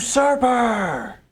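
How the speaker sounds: high, slow, drawn-out furious scream. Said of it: "And he just screams".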